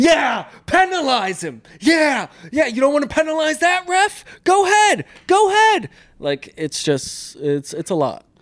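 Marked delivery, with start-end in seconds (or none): 0.0-5.9 very high, loud, sarcastic yelling. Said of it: "he'll do the live play".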